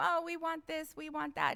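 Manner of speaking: put-on syrupy, sugary-sweet, overly nice tone. Retelling how everyone at a meeting asked for things: imitating people being so nice. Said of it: "everybody's being so nice".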